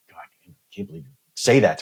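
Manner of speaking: fuming, stewing, seething, furious voice. Retelling lying in bed angry: imitating own seething anger. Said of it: "I'm just seething".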